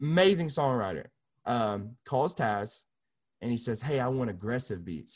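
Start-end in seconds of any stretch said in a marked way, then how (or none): none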